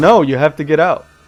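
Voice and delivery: firm, stern, no-nonsense delivery. Retelling ordering a man to get out a second time, retelling a sterner order. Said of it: "Like a bit more sternly this time".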